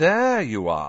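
slow, lazy, languid drawl, words drawn out. Reading a story aloud, the narrator voices Draco Malfoy greeting Harry and Ron: Draco Malfoy drawl. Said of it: "he drawled".

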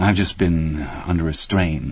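ordinary talk

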